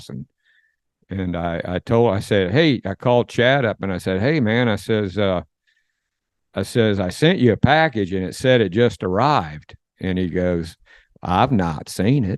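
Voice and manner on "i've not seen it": put-on backcountry country way of talking. Retelling a phone call about a package, the speaker gives Chad's reply; Chad's country voice. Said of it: "in that country that country voice".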